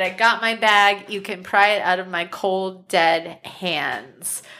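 ordinary talk

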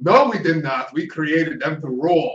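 horrible, clumsy fake Dutch accent. Imagining someone in Holland objecting, in a horrible Dutch accent. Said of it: "Horrible accent. I don't know a Dutch accent".

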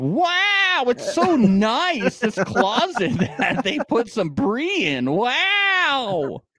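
high, slow starry-eyed gush. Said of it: "he's like".

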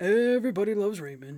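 unsettling, creepy, deliberately terrible put-on voice. Showing how a well-known actor talks, creepy impression. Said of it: "I'm doing it creepy".

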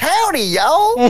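very high put-on country accent. Showing how the others would start the podcast: put-on country accent. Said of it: "the accent is viral".

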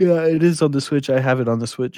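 words stretched by a yawn. Speaker answering others in a group conversation, yawning while talking. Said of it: "There's a yawn in there".

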